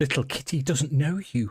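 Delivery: wild, high, feral, cat-like shout. Narrator voicing a young woman confronting the listeners, Stella shouting. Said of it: "she shouts".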